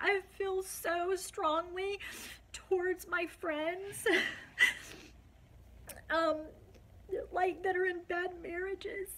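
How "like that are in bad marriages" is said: high-pitched, tearful, crying voice. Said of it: "I'm so sorry I'm crying".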